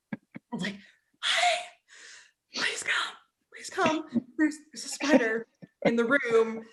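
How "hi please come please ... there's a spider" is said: halting, struggling, panicked, barely able to speak. Retelling calling him in about a spider, acting out struggling to talk. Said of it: "but I couldn't really talk yet".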